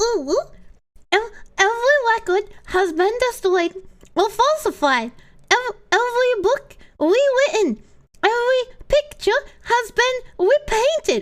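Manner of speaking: very high, eerie, spooky ooh-woo voice. Asked to try the ooh-woo voice, the speaker gives it a go: ooh-woo voice. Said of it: "I'll try the ooh woo".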